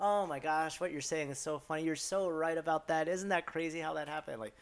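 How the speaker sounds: loud mock old-woman chatter, laughing and giggling. Retelling how a group of older women reacted: imitating giggling women. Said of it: "laughing and giggling, like".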